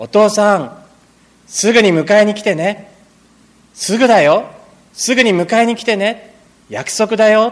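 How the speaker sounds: put-on high, loud calling voice like a little boy.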